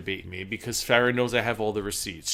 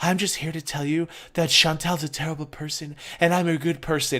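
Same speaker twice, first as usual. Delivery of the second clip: syrupy, sickly-sweet put-on voice; 4 semitones higher than usual. Mocking a rival who starts a channel: imitating a sweet, sickly voice. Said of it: "they put on the sweet and sickly voice".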